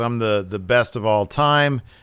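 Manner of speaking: ordinary talk, nothing marked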